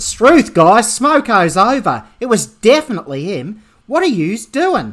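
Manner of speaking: loud put-on Australian accent. Asked to say the line with an accent, the speaker shows how: Australian accent. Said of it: "an Australian accent. Like this".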